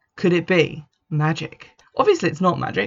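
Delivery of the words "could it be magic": ordinary talk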